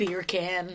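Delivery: mock very angry voice. Retelling an exercise of naming things angrily: imitating someone saying it really angrily. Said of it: "saying it really angrily".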